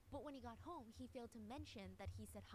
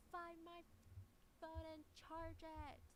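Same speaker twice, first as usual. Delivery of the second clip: screamed loudly at high pitch; 7 semitones higher than usual. Retelling what a woman screamed at a man, imitating her screaming. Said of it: "And she's screaming".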